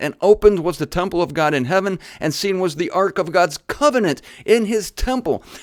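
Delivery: fast, hurried reading. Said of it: "I'm talking fast because my time's running away".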